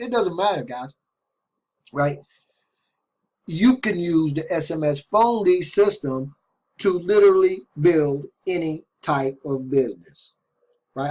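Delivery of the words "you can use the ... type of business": slow, deliberate delivery. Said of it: "I'm already talking slow".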